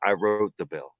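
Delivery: cool, tough, hard gangster delivery. Showing how the line should have been said: imitating a gangster-like delivery. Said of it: "he would have said it like a gangster".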